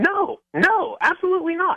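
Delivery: slightly defensive, pitched way up, high and slow. Denying plans to meet a woman at Disneyland: a little defensive. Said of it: "You sound a little defensive about it".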